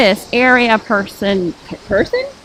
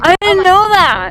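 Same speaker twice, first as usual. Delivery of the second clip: high, gushing mock Valley Girl accent. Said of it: "el Valley Girl accent".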